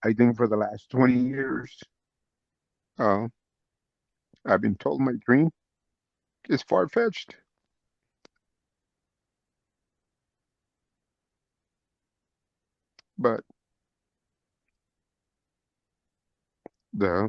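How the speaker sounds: voice holding back tears. Answering a question for people told no many times, holding back tears. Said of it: "try to explain it without crying".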